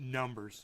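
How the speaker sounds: mock grave, low, dead-serious single word. Retelling a moment from a live stream: imitating Bong Loaded getting serious. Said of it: "he gets really serious".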